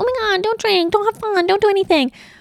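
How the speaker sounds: very high, nagging, lecturing mom voice. Talking about choosing who to be around, briefly imitating a mom. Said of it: "I'm not trying to sound like a mom and be like".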